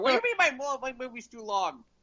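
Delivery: annoyed, high-pitched, offended indignant protest. Pretending the caller is Scorsese complaining: Scorsese voice. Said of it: "it's Scorsese sitting there going".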